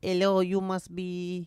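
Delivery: high put-on French accent. Retelling a story, a French girl gets off the plane and greets someone: French accent. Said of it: "This is my French accent".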